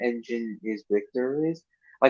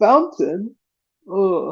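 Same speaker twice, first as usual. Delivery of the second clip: loud cough then a swooping, drawn-out groan; 7 semitones higher, 5 dB louder than usual. Retelling how Bob reacts at the episode's end: imitating Bob the Builder coughing and groaning. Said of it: "Bob coughs like this".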